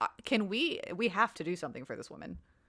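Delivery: ordinary delivery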